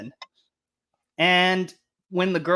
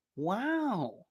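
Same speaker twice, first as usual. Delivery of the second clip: soft, breathy put-on impression voice. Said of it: "that was a fucking great Owen Wilson impression".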